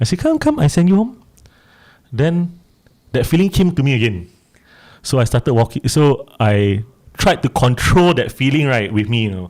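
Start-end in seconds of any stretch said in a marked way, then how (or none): 0.2-1.2 very high, gentle, coaxing voice. Retelling what they said aloud, voiced as though speaking to a child. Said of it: "like as though I'm speaking to a child".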